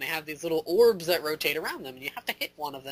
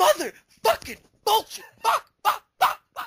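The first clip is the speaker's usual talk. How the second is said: very high, loud, all-out raging screaming fit; 6 dB louder than usual. Speaker retells raging after dying over and over, retelling own screaming. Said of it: "I'm like screaming this as loud as I can".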